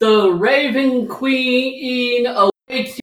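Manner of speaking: high-pitched yelled delivery. A retreating foe yells back at the party: yelled Raven Queen voice. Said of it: "In the Raven Queen's voice".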